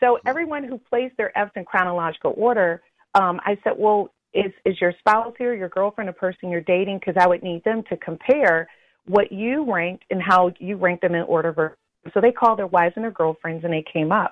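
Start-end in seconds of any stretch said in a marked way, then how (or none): none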